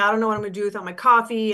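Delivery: put-on crying, tearful pleading voice. Retelling a client giving up coffee: imitating someone crying. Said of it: "literally was crying".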